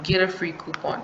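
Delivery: ordinary talk, nothing marked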